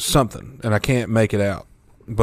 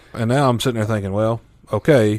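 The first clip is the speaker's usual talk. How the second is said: usual speaking voice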